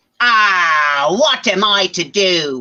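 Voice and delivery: heavy bad Cockney accent with drawn-out "ah". A storyteller voices Gert's line to a listener: bad Cockney accent as Gert. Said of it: "What's with this bad Cockney accent?".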